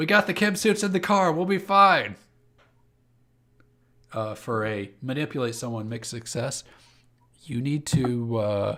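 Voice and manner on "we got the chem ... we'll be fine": very loud, shrill, high-pitched yelling. Voicing rioters yelling back during a riot: yelling back. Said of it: "They yell".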